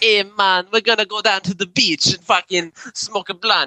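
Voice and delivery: exaggerated, very high Jamaican accent. Showing the others a joke voice: exaggerated Jamaican accent. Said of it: "It's so bad".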